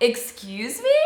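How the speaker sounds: mock-shocked, very sassy tone. Retelling a shocked reply to a stranger's remark: imitating own sassy reply. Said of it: "it was probably very sassy".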